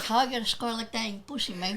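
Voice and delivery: put-on Cuban accent, pitched a bit high. Retelling a movie's interrogation scene: Al Pacino's Tony Montana accent. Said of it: "fucking Al Pacino with his accent".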